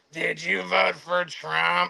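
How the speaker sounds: slow, drawn-out, creaky, rough rasp. Retelling a woman's question to a driver in Roz from Monsters, Inc. voice. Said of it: "She sounds like the lady from fucking Monsters Incorporated".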